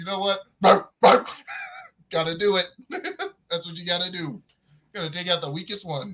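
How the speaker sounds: mock chuckling, talking through laughter. Retelling a man who barked at a 3-year-old; imitating him laughing while talking. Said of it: "just like laughing".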